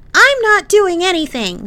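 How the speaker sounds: high, loud, furious angry yelling. Given his first task, a man answers, yelling angrily. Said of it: "he yelled angrily".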